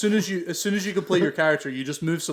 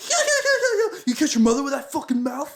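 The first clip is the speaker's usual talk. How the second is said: put-on, very high, proper, furious screaming tirade; 12 semitones higher, 4 dB louder than usual. Retelling how a streamer yelled into the mic at a player: imitating Ninja screaming. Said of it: "he's proper screaming at the guy".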